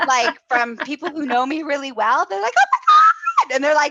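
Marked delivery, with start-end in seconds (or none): 2.6-3.5 mock shrill, very high, very loud squealing delight. Retelling how close friends reacted to good news, imitating their high-pitched squeal. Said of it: "their voice octave like goes up like five octaves".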